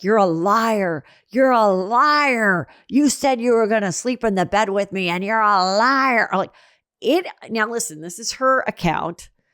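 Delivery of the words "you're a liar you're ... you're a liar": furious, accusing screaming with "liar" drawn out. Retelling a man screaming at a woman who got out of bed, retelling a scream. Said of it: "he's screaming at her like".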